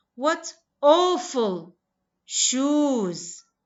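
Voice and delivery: pitch rises then falls on "awful" and "shoes". English intonation example with adjective and noun: rise-fall on awful and shoes. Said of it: "Your intonation should rise and fall on both the adjective and noun".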